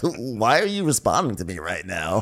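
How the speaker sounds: put-on little chuckle through the line. Retelling how Andy greeted Crystal: imitating Andy chuckling. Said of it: "he, like, chuckles, like".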